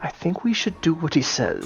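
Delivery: hushed, very soft whisper. Whispering to another character during a tense standoff: in-character whisper. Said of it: "I'll whisper to Alakan".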